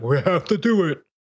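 high, slow mock puppet voice. Speaker quotes the person they are talking with: Statler and Waldorf voice. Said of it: "That's my Walter and Statler voice for you".

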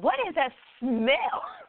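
put-on sudden, high-pitched, blurted exclamation of disgust. Speaker acts out what they would have said in that moment, really loud. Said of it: "I would have probably said really loud".

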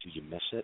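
very soft, hushed half-whisper. Retelling a question someone leaned in and asked: imitating a half-whisper. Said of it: "he kind of whispered in my ear".

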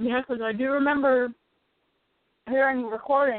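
muffled speech with mouth full. Chatting on a show while eating ice cream: talking with mouth full. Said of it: "I have ice cream in my mouth".

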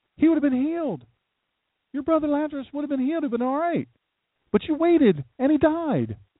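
high, accusing, complaining voice.

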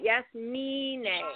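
stress on middle word me. Spelling out how to say yes-me-nay, stress on the syllable me. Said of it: "like the emphasis is on me".

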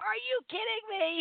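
mock very high, shrill shrieking scream. Retelling how she reacted when Greg said she won a raffle, screaming. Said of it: "I screamed".

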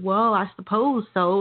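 put-on slow, drawn-out cowboy drawl. Retelling his reply when asked if he misses his family, in a cowboy voice. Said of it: "in that cowboy voice".

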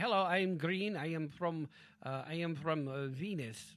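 poor put-on Russian accent. Playing a green alien from Venus in a comic exchange, bad Russian accent. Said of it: "Why do you sound like a bad Russian accent all of a sudden?".

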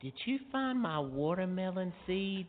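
tiny, small, very high little voice. Retelling what the communications girl asked on a phone call yesterday, Shana's little voice. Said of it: "she goes with her little voice".

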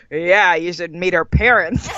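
mean, snide, sneering, mocking put-down voice. Recalling the inner bully voice in her head, imitating a snide inner voice. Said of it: "the snide voice in my head".

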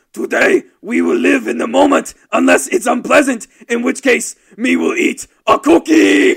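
bellowing, rough and high-pitched. Speaker reads a motivational quote aloud in a Cookie Monster voice. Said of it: "me read this as cookie monster".

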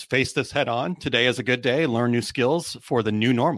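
ordinary talk

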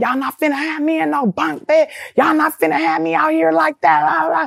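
mock high, heated ranting yell. Retelling a rampage over being made to sleep in a bunk bed: imitating own past yelling. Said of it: "marching up and down the hallways and yelling".

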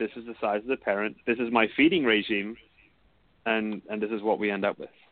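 plain

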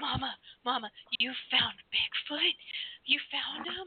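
put-on high, thrilled, eager, excited little boy voice. Retelling how the son reacted to the pictures: imitating an excited son. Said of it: "my son was so excited".

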